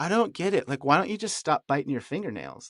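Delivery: mock straight-faced delivery. Recounting what a friend said to him on the couch: retelling a deadpan line. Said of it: "with a dead straight face".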